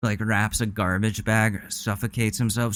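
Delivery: ordinary delivery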